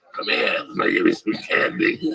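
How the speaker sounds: put-on creaky electrolarynx voice-box drone. Joking about ending up with a voice box: imitating an electrolarynx voice. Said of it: "I'm like the pedophile with the voice box".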